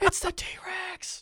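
acted, whispered, breathless, thrilled excited cry. Retelling a moment in a movie theater: retelling a scream at full volume. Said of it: "just at the top of my lungs, I screamed that".

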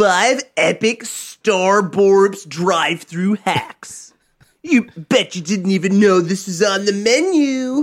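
dragged out, very slow, leaning on menu. Joking about a YouTuber's drive-thru video: imitating a YouTuber video intro. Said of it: "some dumb, like, local YouTuber".

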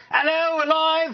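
football announcer voice going live, pitched way up. Explaining where the accent comes from after Saturday soccer games: soccer commentator voice. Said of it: "you get up on a Saturday morning and you sound like this".

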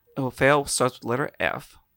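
ordinary talk, nothing marked

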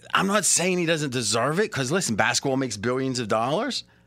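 ordinary delivery

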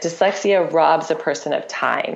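ordinary delivery

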